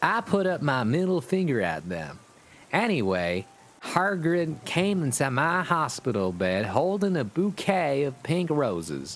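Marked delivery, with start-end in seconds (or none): 0.0-2.2 heavy, laid-on put-on Southern belle accent. Telling a hospital story, voicing a girl: Southern belle voice. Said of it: "this is a girl, so I got to sound like a southern Southern belle".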